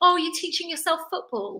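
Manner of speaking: high, patronising, condescending tone.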